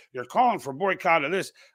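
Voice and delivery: plain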